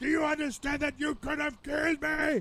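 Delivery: put-on shrieking old woman voice. Retelling a story about an elderly woman who shrieked at a driver, imitating her screaming old woman voice. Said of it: "she is screaming at the top of her lungs".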